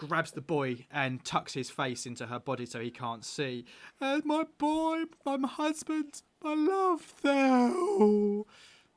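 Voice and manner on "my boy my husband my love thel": crying, higher and louder. Voicing a woman who sees her husband's body: sobbing. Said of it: "she just starts sobbing".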